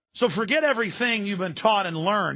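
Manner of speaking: usual speaking voice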